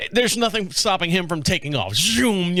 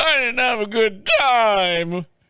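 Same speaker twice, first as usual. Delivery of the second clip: put-on sobbing voice, fake crying, drawn out in time; 4 semitones higher than usual. Speaker retelling how he answered his wife's question, fake crying. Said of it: "I do the fake crying".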